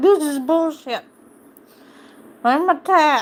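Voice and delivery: mad, fed-up, pissed-off pet voice. Voicing a pet that is mad at being woken: voicing a pissed-off pet. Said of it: "He's mad".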